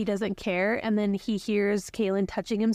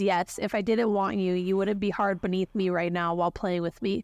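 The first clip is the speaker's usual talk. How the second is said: plain reading voice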